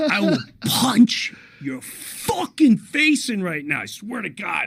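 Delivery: play-acted panicky, high, mild scared half-yell. Retelling being scared on a shaking ride: imitating himself screaming. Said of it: "I'm screaming, going".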